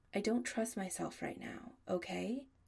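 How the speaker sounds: ordinary delivery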